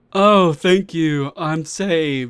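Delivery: slow, mocking, insincere sarcastic tone. Mocking a game character who thanks the player for help, in a mocking imitation. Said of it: "As if he didn't really need our help".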